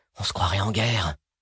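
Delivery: muttering, mumbling, murmuring. Reading a novel, Paul watches a dying mercenary, muttering.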